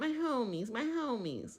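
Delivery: scornful, derisive, high, drawn-out mocking repetition. Mocking how a reality show houseguest keeps saying homie: mocking imitation of a houseguest. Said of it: "Every time".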